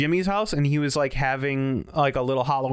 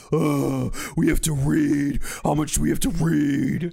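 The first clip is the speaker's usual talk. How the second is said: rough, dragging, slow, creaky voice. Doing an impression of a co-host complaining about reading: impression of Jeff. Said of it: "Let me do my impression of Jeff".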